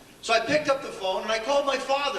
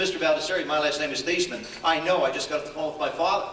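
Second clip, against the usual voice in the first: ordinary talk, nothing marked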